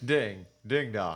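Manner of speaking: put-on suave British spy accent. Telling a joke, deliver the punchline in a James Bond accent. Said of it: "That was my James Bond accent".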